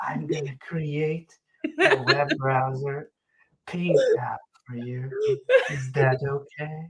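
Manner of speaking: put-on whispering AI voice. Imitating the coding AI that won't change its voice: whispering AF Nicole AI voice. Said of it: "a whispering kind of like this".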